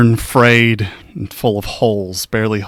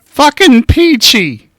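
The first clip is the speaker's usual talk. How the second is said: put-on very high, cranky, crotchety old-man voice; 7 dB louder than usual. Voicing a man at a window calling a player over: old crotchety man's voice. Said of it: "an old, crotchety man's voice".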